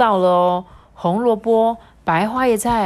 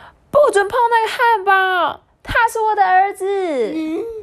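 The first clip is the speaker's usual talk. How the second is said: sudden high, loud shouting; 8 semitones higher than usual. Reading a picture book aloud, the mother rushes in: shouting. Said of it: "妈妈冲进来大叫".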